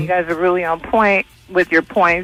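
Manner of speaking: ordinary talk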